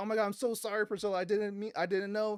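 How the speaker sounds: put-on high, tearful little-girl voice breaking into sobs. Speaker retelling a story scene, voicing a little girl, imitating a crying girl. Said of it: "So this girl just starts crying".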